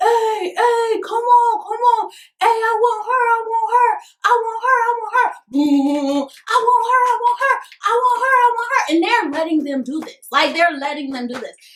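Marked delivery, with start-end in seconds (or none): 0.0-8.9 play-acted, very high-pitched yelling like young boys. Retelling how young boys behind a glass window were yelling: imitating boys yelling. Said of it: "just yelling".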